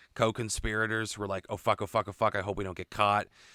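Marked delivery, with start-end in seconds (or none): none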